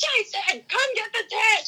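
acted, shrill, very high-pitched scream. Recounting a windstorm during a shower, calling for the tent, retelling a scream. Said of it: "I'm like screaming".

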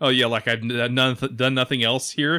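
ordinary talk, nothing marked

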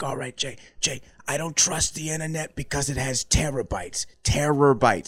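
breathy, very loud, high-pitched voice. Describing an Adam Sandler character to friends, doing his breathy character voice. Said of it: "very breathy character".

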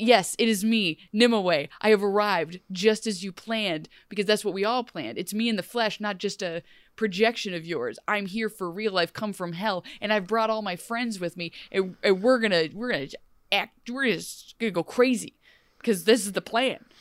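ordinary talk

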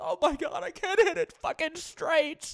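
put-on, very high, slow, drawn-out blubbering. Retelling Bryson on the range after a major: imitating Bryson crying. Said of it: "literally, like, crying".

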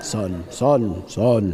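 very low, deep radio voice.

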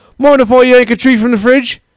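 put-on Cockney accent, pitched very high. Showing how Australian slang would be used, slipping into a Cockney accent. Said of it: "That turned into like a Cockney accent".

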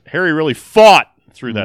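very loud, high shout, like typed in caps lock. Showing how the line should be said: loud, like in all caps. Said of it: "you have to say it like the word caps locked".

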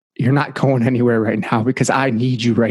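whispering. Recounting a moment of crying when a voice spoke into their ear, retelling a whisper. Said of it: "And the whisper was like".

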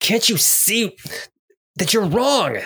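very high-pitched shout through clenched, gritted teeth. Voicing a character on her turn in a fight, yelling through gritted teeth. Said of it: "through gritted teeth, just yells out".

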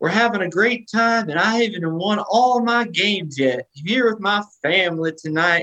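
fake Cajun accent laid on, pitched high. Retelling his first appearance at a basketball game: imitating a put-on cajun accent. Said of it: "he got his Cajun accent".

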